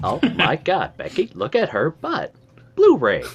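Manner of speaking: put-on Valley girl voice, high and swooping. Teasing the other speaker about his wife's remark, in a mock valley girl voice. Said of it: "talked like a Valley girl".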